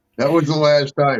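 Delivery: ordinary delivery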